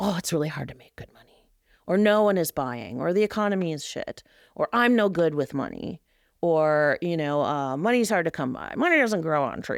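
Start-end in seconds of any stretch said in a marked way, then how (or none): 7.8-9.8 put-on old-time Prohibition-era mobster voice. Speaker listing bad money beliefs for business owners, in a 1920s mobster impression. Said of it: "That's my nineteen twenties mobster impersonation".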